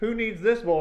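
high, loud, showy grandstanding delivery.

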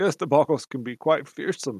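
speaking with a chuckle running through the words. Voicing a character answering an introduction: chuckling while talking. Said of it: "He chuckles".

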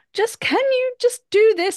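very high, strained calm voice with held-in frustration. Retelling own words to a teenager: imitating own held-in frustration voice. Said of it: "I've got this certain voice".

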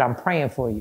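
soft, hushed, confiding stage whisper. Retelling what a uniformed lady said at the hospital: imitating a half-whisper. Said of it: "and she whispered".

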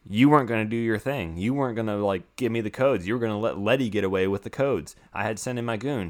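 plain

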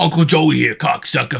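loud, rough, barking voice. Doing a voice the cartoon character could have: Joey Diaz voice. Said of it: "He's like".

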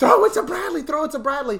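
shrill, frantic scream, very high and very loud. Recalling one play from the game: retelling a scream. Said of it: "I'm just screaming".

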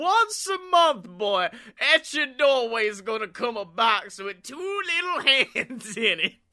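put-on American Southern accent. Joining in on a comedy bit, speaking in a southern accent. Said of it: "I thought you were doing the southern accent too".

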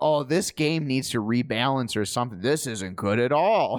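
ordinary delivery

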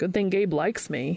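ordinary delivery

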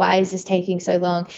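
words sobbed out through tears. Retelling begging for it to be over at four AM: retelling own crying. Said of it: "just crying".

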